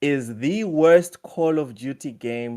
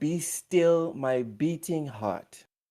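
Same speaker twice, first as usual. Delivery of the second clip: slow, quiet half-whisper, as if to oneself; 6 dB quieter than usual. Reacting to news someone wrote in the chat: half-whispering to oneself. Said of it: "I'm just whispering to myself".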